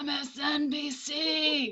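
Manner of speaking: very hoarse rasp, dragged-out C sound. Retelling what Nick said after tubes down his throat, imitating his very hoarse voice. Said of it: "Very hoarse voice comes out and it's like".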